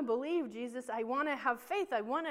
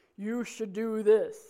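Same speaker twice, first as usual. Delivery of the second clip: mock, big, loud booming voice; 3 semitones lower, 6 dB louder than usual. Imagining putting a can to your ear and God answering, in a booming voice of God. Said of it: "it was like this booming".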